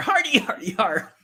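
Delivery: high-pitched monster voice. Talking about Mario Kart, showing they can do the voice: higher-pitched Bowser Jr. voice. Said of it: "Bowser with a higher pitch voice".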